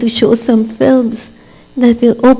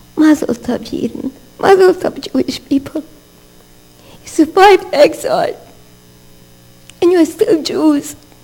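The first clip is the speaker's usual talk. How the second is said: crying, tearful voice, pitched higher; 4 semitones higher than usual. Blessing the people after long exile, crying while speaking. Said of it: "Forgive me for my tears".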